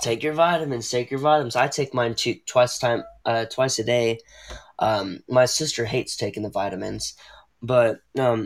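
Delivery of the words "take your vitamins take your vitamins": usual speaking voice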